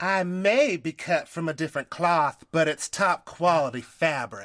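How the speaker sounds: put-on Southern accent. Quoting Jackie Goldschneider in an odd put-on accent. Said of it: "I don't know what that accent was".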